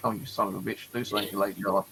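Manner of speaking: ordinary delivery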